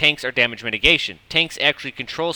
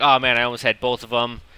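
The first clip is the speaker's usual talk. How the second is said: usual speaking voice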